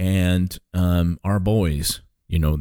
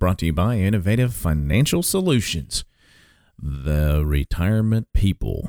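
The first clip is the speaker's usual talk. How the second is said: very slow, drawn-out, deliberate delivery. Show host welcoming listeners back and naming the sponsor, said slowly. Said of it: "I said that slow for a reason".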